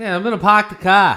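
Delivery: very loud put-on Boston accent. Answering a request to hear a Boston accent: Boston accent. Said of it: "let's hear his Boston accent".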